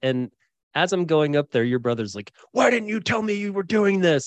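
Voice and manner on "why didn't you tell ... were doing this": put-on high, upset yelling. Retelling what a brother said before going on stage: imitating someone yelling. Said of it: "he's, like, yelling at me".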